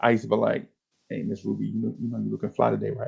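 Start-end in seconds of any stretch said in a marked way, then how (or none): 1.1-3.1 smooth, slick, charming, flirty sweet talk. Retelling greeting a woman in the store: retelling own smooth flirting. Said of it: "You sound just like your daddy".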